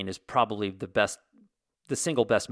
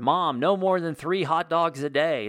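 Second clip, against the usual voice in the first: mock high-pitched shouted yell; 7 semitones higher than usual. Speaker retells what they yelled at their 82-year-old mom: retelling yelling at mom. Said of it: "And I'm yelling at her".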